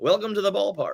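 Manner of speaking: put-on old-timey announcer voice. Asking another speaker about his style, imitating a classic broadcaster voice. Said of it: "that classic broadcaster's voice".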